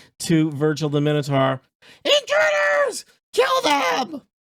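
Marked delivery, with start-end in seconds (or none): 2.1-4.2 tiny gnome bellowing, very high, top of lungs. In a story scene, a gnome yells to a minotaur: gnome yelling at top of lungs. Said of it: "yells at the top of his little gnome lungs".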